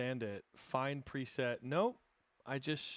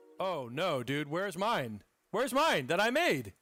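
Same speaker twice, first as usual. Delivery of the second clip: shouting, higher and louder; 4 semitones higher, 6 dB louder than usual. Searching for a missing saved preset, yelling. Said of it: "Sorry for yelling".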